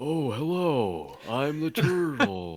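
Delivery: high, very slow, out-of-breath turtle voice. Showing the turtle voice used when reading to a son: out-of-breath turtle voice. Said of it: "I have the same turtle voice every time".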